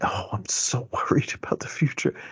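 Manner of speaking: weird, off-putting, soft and breathy whisper. Describing a woman who would start whispering, quoting her: imitating someone whispering. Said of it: "she would start whispering".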